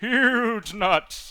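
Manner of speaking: cartoon horse voice. A speaker banters with another person, repeating a line in Mr. Horse voice. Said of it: "doing like mister Horse's vo- voice".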